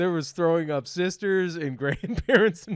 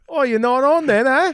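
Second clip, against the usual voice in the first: loud, high, casual Australian accent; 8 semitones higher, 8 dB louder than usual. Imitating what a Scottish woman would say: Australian accent. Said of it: "That was Australian again".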